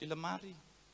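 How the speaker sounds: very soft, low, barely above a breath. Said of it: "tapi pelan".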